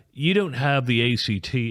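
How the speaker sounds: slow, put-on posh British accent. Retelling what the school told him while his mom was with him, in a put-on British accent. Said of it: "I'm just putting on an accent here to make it sound like Yale or British".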